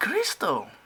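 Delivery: high, loud, exasperated, blurted-out outburst. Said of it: "That's her sister going off again".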